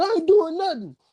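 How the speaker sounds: put-on sobbing words, voice very high-pitched. Telling a story about a player the coach confronted; imitating someone crying. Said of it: "So he started crying".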